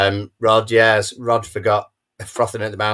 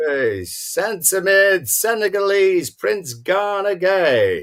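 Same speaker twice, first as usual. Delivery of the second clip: very high stadium announcer, name drawn out; 11 semitones higher than usual. Reading out a football team lineup, stadium announcer voice. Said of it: "you're the stadium announcer now".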